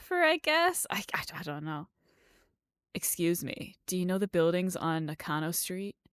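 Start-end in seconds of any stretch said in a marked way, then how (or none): 2.9-5.9 slightly gruff put-on boy voice. Trying out a character voice for a co-host, a little gruffer voice. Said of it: "I'll go a little gruffer".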